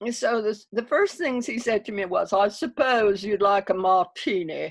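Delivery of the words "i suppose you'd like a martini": lofty, put-on South African accent. Recounting the first thing he said to the speaker, imitating his south african accent. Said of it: "in that South African accent of his".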